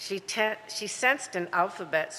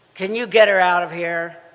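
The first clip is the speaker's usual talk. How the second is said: very loud, rough, gravel-voiced snarl; 12 dB louder than usual. Reading a story, the narrator voices an unseen speaker with a gravelly snarl. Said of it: "The gravel voice snarled".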